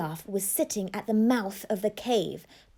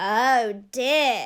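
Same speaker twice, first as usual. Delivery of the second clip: croaking, croaky toad voice; 3 dB louder than usual. Reading a story aloud, voicing the toad: croaky toad voice. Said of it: "croaked the toad".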